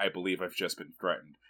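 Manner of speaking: flat, affectless deadpan, low and quick. Recalling a favorite scene and quoting the prince, imitating a deadpan line. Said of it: "it felt so deadpan the way he said it".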